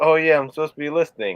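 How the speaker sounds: plain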